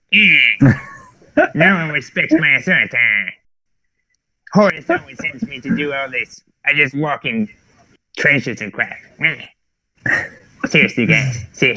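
acted cartoon child voice. Giving the grumpy character Perturabo a voice: Cartman voice. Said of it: "I want to give him like a Cartman voice".

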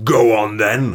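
sour, growling put-on character voice. Voicing a character's line in a story: Quantic scowling voice. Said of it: "That's Quantic's voice now".

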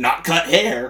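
re-enacted aggressive outburst. Retelling being asked what they do for a living, acting out an aggressive blurt. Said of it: "really, really aggressively".

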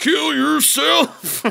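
very high, pushed, strained grunt like straining hard. Imitating how someone says a line, in a strained, grunting voice. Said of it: "He does say it like this. Like he's taking a poop".

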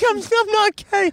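very high, drawn-out, whimpering fake sob. Acting out an imagined scene, protesting to a scientist: mock crying. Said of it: "And you're just sitting there crying like".

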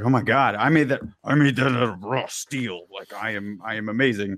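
normal talking voice

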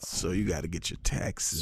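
low, slow, smooth radio DJ voice.

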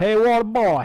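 put-on loud, high Louisiana Cajun accent. Talking about louisiana accents, the speaker quotes a movie in a cajun impression. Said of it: "You ever watch The Waterboy?".

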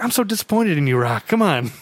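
loving, fond, let-down, disappointed mob boss voice. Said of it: "it's so loving".

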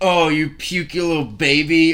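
slow, mocking, teasing tone. Recalling making fun of the listener one night when they were sick, retelling a mocking taunt. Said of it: "I was making fun of you".

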